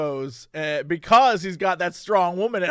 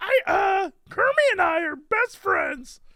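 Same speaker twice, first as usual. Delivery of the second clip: very high-pitched put-on character voice; 13 semitones higher than usual. Joking about what a character would say: imitating Miss Piggy. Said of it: "Piggy's like".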